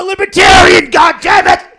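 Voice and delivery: very loud, high ranting yell, top of range. Doing Alex Jones after saying you wouldn't yell, break into a yelling Alex Jones impression. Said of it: "We have to allow for some yelling".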